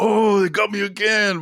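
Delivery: high mock-annoyed groan.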